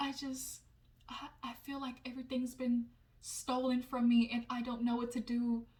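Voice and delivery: put-on soft bedtime-story voice. Retelling another person's words: imitating Paige's bedtime-story voice. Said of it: "she talking like it's a bedtime story".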